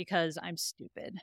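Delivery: sad, sorrowful delivery. Retelling a character's line after a pause: imitating a sad line. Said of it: "in a very sad moment".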